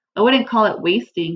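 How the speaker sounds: plain reading voice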